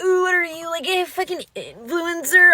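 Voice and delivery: put-on high voice dripping with disdain. Retelling what a boy beside them said about their notifications, mock disdainful voice. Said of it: "like voice dripping with disdain".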